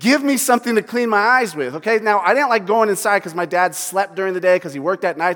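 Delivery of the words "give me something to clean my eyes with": acted-out urgent yelling with raised voice. Retelling a buddy with Cheeto dust in his eyes, imitating someone yelling. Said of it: "he's yelling".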